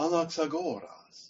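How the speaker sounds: careful reconstructed classical Greek pronunciation. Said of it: "who's going to give the classical Greek pronunciation".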